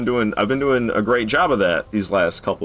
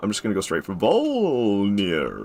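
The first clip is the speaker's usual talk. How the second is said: goofy put-on voice, swooping, one word drawn out. Announcing a choice to skip leveling up: stupid voice. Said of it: "saying it in a stupid-ass voice".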